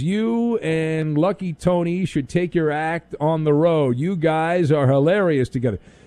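plain

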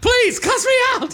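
mock pleading shout, very high pitched.

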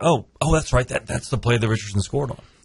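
ordinary talk

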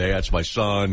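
plain

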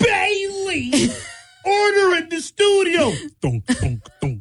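very high, slow, drawn-out judge voice. After a Homer laugh, trying another impression: impression of a gavel-banging man. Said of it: "I got another one".

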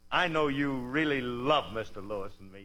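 usual speaking voice

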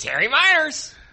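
excited, very high-pitched call in announcing tone. Speakers take turns saying the name, trying an excited high-pitched voice. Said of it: "in an excited pitched voice".

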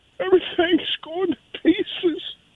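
fake crying. In a comedy bit lamenting a beer no longer sold, mock crying. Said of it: "I'm crying".

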